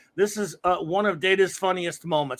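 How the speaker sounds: ordinary talk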